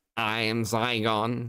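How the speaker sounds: the most unhinged, insane, crazy voice. Imitating someone channeling an alien with eyes closed: imitating an insane voice. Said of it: "And she'd be sat there going".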